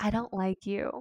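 put-on whisper. Retelling what a child said in their ear, retelling a whisper in the ear. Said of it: "she like goes like she's going to whisper in my ear".

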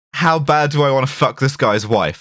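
plain

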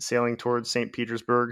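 ordinary talk

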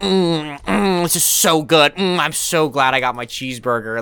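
high, slow, drawn-out taunting mms, savoring gloat. Retelling a video where one man taunts another: imitating someone mocking while eating. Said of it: "totally making fun of the dude".

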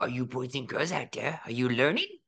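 cartoon reptile character voice. Showing off impressions to the others, doing Leo the iguana voice. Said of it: "I could do Leo from the movie Leo".

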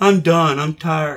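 acted exhausted, worn-out, giving-up tired kid voice. Retelling what kids say after trick-or-treating a few blocks: imitating tired kids on Halloween. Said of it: "heard kids play out on Halloween".

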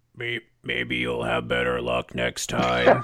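put-on processed raspy-smoker grandpa voice. Recapping an episode, the speaker quotes Copter as the Renegades retreat: Copter voice. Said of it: "That is like digitalized chain-smoking grandpa".

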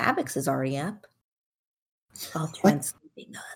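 hushed voice. In character, telling another character someone is still sleeping: whispering. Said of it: "That's why I'm whispering".

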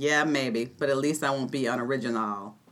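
put-on low, soft Boston-accented delivery.

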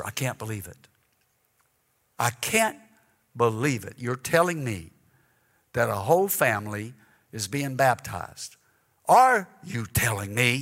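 high-pitched, loud whisper. Retelling a sister's questions during a service: imitating a high loud whisper. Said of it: "speaking in a high, loud whisper".

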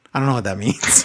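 ordinary talk

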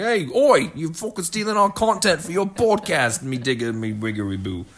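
loud, high-pitched, aggrieved complaining tone. Joking that the BBC will contact them about stolen content: imitating the BBC complaining. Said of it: "B B C will contact us and be like".

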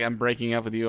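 ordinary talk

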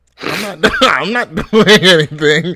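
high, loud, laughing, giggling delivery.

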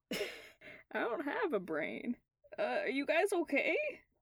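put-on swooping, sing-song country accent with the pitch swinging around. Voicing Jim as he slowly wakes up, in his new country accent. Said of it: "his new country accent".

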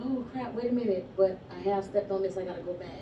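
usual speaking voice

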